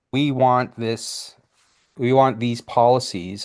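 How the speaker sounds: normal talking voice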